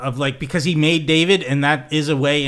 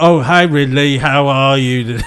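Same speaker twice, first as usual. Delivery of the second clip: sudden, loud put-on British accent; 6 dB louder than usual. Acting out suddenly greeting Ridley, who would find it strange, in a put-on British accent. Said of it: "all of a sudden took on a British accent".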